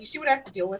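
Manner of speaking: flat dry delivery. Voicing a character who turns to look at another character: deadpan. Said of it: "give him a deadpan and be like".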